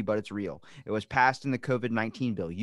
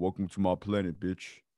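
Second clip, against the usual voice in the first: deep, puffed-up, chest-out macho taunting swagger; 5 semitones lower than usual. Imagining greeting a giant alien: puffed-up macho tough talk. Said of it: "puff my chest out a little bit".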